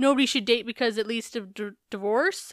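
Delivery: normal talking voice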